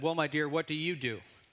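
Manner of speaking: put-on condescending, patronizing tone. Retelling how a woman spoke down to a mother, mock-condescending tone. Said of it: "in a kind of a condescending tone".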